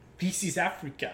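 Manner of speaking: attempted South African accent. Trying out accents, the speaker attempts an attempted south african accent. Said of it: "I think I actually can do South African".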